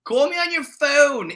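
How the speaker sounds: put-on Delaware County accent. Quoting the cameraman at the end of a video: trashy Delco accent. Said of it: "that Delco trash accent comes out".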